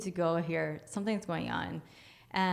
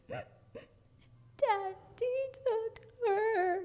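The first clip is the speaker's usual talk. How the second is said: put-on very high, little tiny child voice. Retelling what the crying one answered, in a little tiny voice. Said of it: "it was like this little tiny voice".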